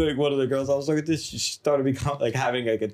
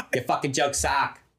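put-on Boston accent. Acting out a girl who never finds the jokes funny: put-on boston accent. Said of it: "that's my Boston accent".

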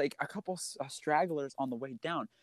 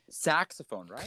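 ordinary delivery

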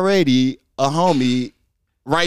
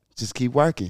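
put-on smooth-talking voice, quieter; 3 semitones lower, 6 dB quieter than usual. Retelling a mentor's advice on a stroll: imitating Andre's smooth voice. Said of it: "the impression, though, is killing me".

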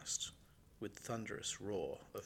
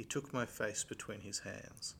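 ordinary delivery

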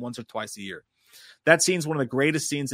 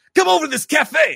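very loud, very high, rough yell; 8 dB louder than usual. Trying the movie detective's line again: Al Pacino impression, a little better. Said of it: "That was a little better".

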